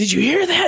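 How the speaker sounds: excited calling out.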